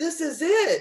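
very high, shrill, all-out yelling. Recounting a moment on the kitchen floor, retelling a yell. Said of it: "I was yelling".

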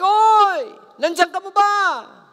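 loud, drawn-out, high-pitched call. Telling a story of a man at his door at midnight, retelling a shout into darkness. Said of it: "he shouted into the darkness".

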